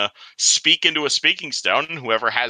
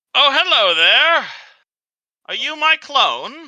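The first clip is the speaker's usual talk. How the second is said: very high-pitched, loud voice; 13 semitones higher, 6 dB louder than usual. Voicing a stone that answers a player, voice sounding just like his. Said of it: "That sounds almost exactly like him".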